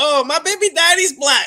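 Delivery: put-on high young woman voice.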